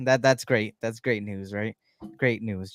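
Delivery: heavy sarcasm, meaning the opposite. Reacting to a player being out for the season: sarcastic. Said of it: "That was sarcasm".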